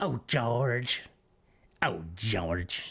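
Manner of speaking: wheezing, low-pitched voice. Doing Barbara Bush speaking to George, in a wheezy Barbara Bush voice. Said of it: "that's my wheezy voice".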